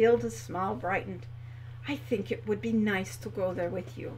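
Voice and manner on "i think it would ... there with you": gentle, soft, quiet delivery. Reading one character's reply to another character, said softly. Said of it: "she said softly".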